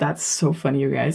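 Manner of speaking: soft, words breaking up with giggles. Reacting to something funny while talking to viewers, laughing while talking. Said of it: "I'm sorry, I'm laughing".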